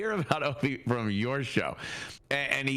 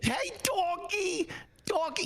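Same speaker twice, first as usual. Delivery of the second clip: very high, sugary, put-on cutesy voice. Mocking an older man's habit: imitating a put-on cutesy voice. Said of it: "this thing that I think he thought was cute".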